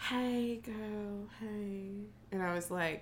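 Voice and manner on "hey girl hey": secretive, barely-there, hushed stage whisper. Retelling a phone call from Billy, imitating Billy half-whispering.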